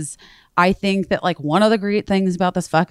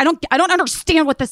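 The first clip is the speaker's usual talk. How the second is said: mock male yelling, much higher; 11 semitones higher than usual. Retelling a phone call where the man called started yelling, imitating a man yelling. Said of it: "he was like yelling at me".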